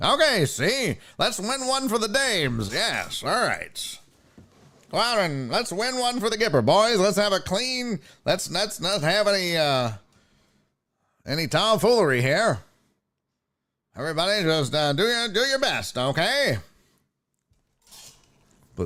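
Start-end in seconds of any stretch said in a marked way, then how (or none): 0.0-16.6 put-on vintage, old-timey 1920s-style voice. Imitating the official at the Stanley Cup face-off: imitating a 1920s-style speaker. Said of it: "it was very nineteen twenties".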